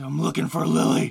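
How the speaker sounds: gruff loud voice. Imitating the game's main character: gruff Keanu Reeves voice. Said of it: "a gruff Keanu Reeves".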